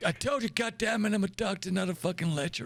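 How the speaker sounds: put-on gruff, crotchety old American man, impatient, barking outburst. Praised by a cadet during questions, the speaker does Admiral McCoy's old man American voice. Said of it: "How do I do an old man American voice? Well done, cadets, for getting to this point in the academy. You now embark on the next and most important stage of your time here. I'm supposed to be giving you".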